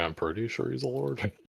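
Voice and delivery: barely audible, very quiet under-the-breath mutter. Voicing a character's aside after greeting a lord: muttered under his breath. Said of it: "under his breath, he's like".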